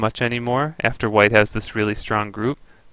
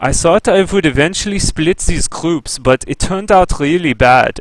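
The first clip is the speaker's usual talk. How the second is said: put-on German accent in English, pitched up; 6 semitones higher, 5 dB louder than usual. Quoting what a man said, done in a german accent. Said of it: "that's my German accent".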